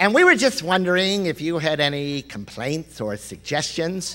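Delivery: put-on woman's voice, like a phone caller. Retelling being asked about his surgery stay, the speaker voices the woman: imitating Heather's voice. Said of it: "I'm going to do the same voice as the woman".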